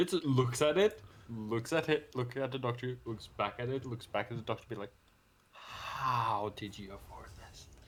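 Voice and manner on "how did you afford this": quiet muttering under breath, much slower. Retelling what a kid said to the doctor, muttered under his breath. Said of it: "basically under his breath".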